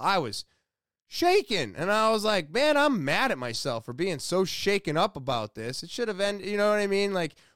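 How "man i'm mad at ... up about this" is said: usual speaking voice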